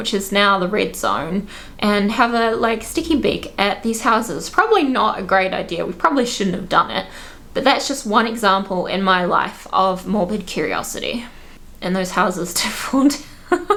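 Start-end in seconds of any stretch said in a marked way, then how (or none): 11.8-13.8 words breaking into laughter. Sharing an example of morbid curiosity with listeners, laughing while talking. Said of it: "I'm sorry, I'm laughing".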